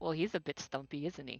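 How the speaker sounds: very low, deep muttered aside. Playing Alfredo, speaking to the other goblins: muttering in character. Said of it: "Alfredo mutters to the other goblins".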